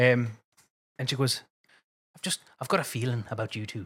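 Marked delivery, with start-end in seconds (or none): 2.6-3.9 imitated, put-on Irish accent. Retelling what a woman said to the speaker and a companion, in put-on Irish accent. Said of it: "I don't know how good my accent is".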